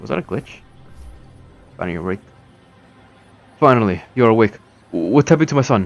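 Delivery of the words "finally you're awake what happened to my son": high-pitched, full, hard yelling. A father in a game scene, while his children tell him to stop, yelling. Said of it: "Stop yelling".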